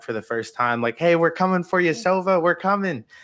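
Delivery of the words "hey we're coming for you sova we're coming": excited, loud, pitched-up shouting. Retelling calling to a teammate over the mic, imitating own past scream. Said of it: "I just screamed in the mic".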